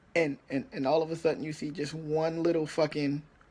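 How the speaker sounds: normal talking voice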